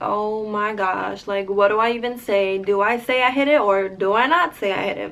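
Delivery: normal talking voice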